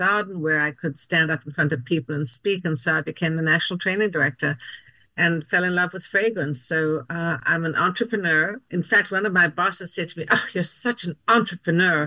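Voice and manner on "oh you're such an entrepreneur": put-on disdainful, scornful tone. Retelling a boss's remark to them, the speaker mimics it with mock disdain. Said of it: "he said it with such disdain".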